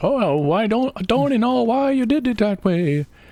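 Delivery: high, slow, butchered Irish accent.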